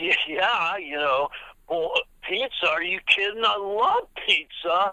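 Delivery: easygoing Valley surfer voice. Asked what Sean Penn sounded like, the speaker does a Sean Penn Valley Boy voice. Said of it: "so what I did was I sort of did my like".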